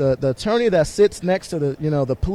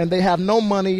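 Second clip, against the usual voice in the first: ordinary talk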